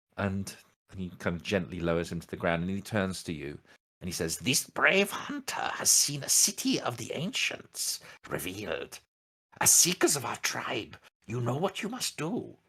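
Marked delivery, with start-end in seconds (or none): 4.4-12.5 high, swooping, sing-song wise elder voice. Narrating, the speaker voices the chief elder addressing the seekers, in a Yoda voice. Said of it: "I don't know why I'm going all Yoda".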